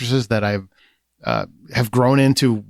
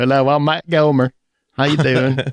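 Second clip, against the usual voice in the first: put-on a touch of Southern Australian accent; 3 semitones higher than usual. Joking that you are someone else, introducing yourself: slight Southern Australian accent. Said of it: "a little bit Southern Australian in that one".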